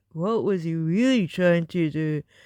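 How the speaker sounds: sinister put-on low, creepy, mocking voice. Speaker mocking a channel's narration again, apologizing for it: mocking creepy voice. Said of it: "taking the piss in the creepy voice".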